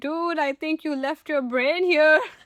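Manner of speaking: loud yelling shout. Retelling yelling at the other speaker from across the sand, retelling a yell. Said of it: "I'm yelling from there".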